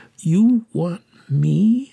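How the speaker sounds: astonished, amazed, full of wonder. The orphan keeper's assistant answers the children asking her to stay, amazed.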